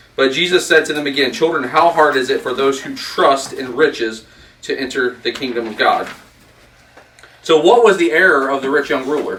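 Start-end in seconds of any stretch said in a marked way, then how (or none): none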